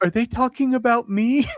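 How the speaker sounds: very high, tiny, small put-on voice. Recounting hearing a little voice, acting out what it said. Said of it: "that little voice".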